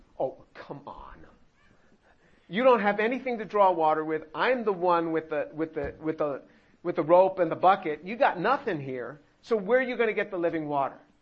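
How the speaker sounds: mocking, scoffing, snide, sarcastic tone. Acting out a woman's reply to Jesus: imitating a sarcastic retort. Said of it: "she's being sarcastic with Jesus".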